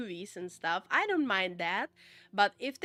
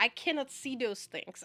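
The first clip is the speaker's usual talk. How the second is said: ordinary delivery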